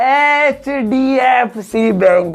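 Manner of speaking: very slow, drawn-out slow-motion delivery. Hindi lesson on letter sounds, name repeated for listening: slow-motion, drawn out. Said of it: "अब slow motion में सुनो".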